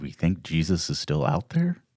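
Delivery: voice dropped to a hushed undertone. Retelling a question put to Damon, speaker uses a lowered voice. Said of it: "I kind of lower my voice".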